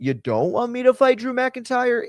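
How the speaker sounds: high, sarcastic tone.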